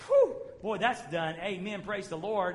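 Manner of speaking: whoop of relief.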